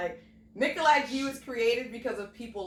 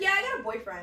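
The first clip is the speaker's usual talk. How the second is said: mock casual, offhand, so-what nonchalant tone. Retelling what a woman said about having a boyfriend; retelling a nonchalant reply. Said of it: "she said it like so nonchalantly".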